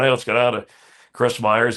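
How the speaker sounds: normal talking voice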